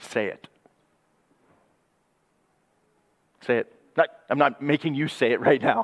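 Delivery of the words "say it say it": breathy whispered father voice. Urging listeners to give thanks, sounding like a dad to kids. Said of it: "I sound like a dad to the kids".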